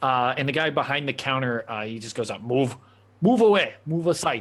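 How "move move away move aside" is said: put-on Russian accent. Voicing the man behind the counter telling a player to move: Russian accent. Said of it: "make you guess what accent I was doing there".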